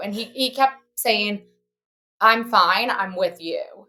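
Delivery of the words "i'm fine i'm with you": put-on dazed, trance-like speech, louder. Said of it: "it sounded like he was in a trance".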